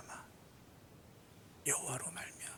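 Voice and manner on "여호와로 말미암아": whispered, much softer. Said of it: "여호와로 말미암아 repeated".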